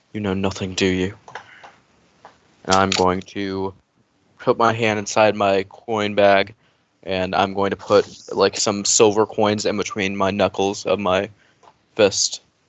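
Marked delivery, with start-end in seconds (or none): 0.1-1.1 quiet mutter under the breath. Speaking in character while looking at Gorbun: muttered under the breath. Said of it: "say in Abyssal under my breath".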